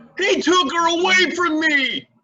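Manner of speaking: very high, shrieking, hysterical yell. Pressed to get on with it during questioning, the speaker finally answers, yelling. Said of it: "Can we stop yelling now?".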